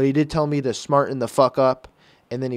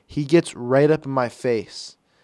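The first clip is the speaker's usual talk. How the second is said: ordinary talk, nothing marked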